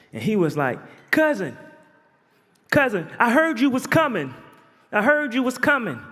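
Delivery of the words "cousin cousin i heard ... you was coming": very high, distinctive, piping voice. Retelling what a voice called out from inside the holding tank: imitating Anthony's very high voice. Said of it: "Anthony had the highest, most distinctive voice".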